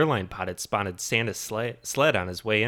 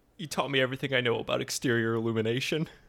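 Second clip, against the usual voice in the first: put-on crying, much quieter; 4 dB quieter than usual. Acting out a quoted scene where he is crying: imitating someone crying. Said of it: "He's crying. He's like".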